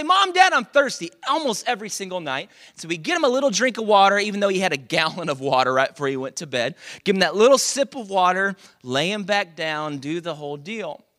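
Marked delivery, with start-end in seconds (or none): 0.0-1.1 put-on very high, loud child's calling voice. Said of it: "So he'd say".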